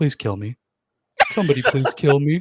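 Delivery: loud, swooping, gloomy, despairing depressed clown voice. Voicing a summoned clown slumped before the crowd: depressed clown voice. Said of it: "A depressed clown".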